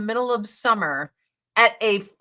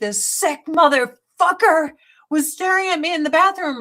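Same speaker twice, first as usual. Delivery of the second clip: mock furious, pitched-up angry outburst; 6 semitones higher than usual. Retelling yelling at a friend about a man in the bathroom, mock-angry yelling. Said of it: "I'm like yelling at my friend".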